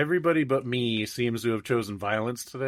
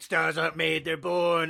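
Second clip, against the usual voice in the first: put-on croaky, raspy old smoker's voice. Retelling a skit, playing a fairy godmother, old smoker voice. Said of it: "I do like the fucking old smoker voice".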